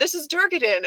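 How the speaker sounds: high, loud, flustered blurt.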